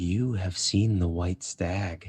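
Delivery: close whisper. Voicing a character who pulls a player close: whispering in someone's ear. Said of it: "she just whispers in your ear".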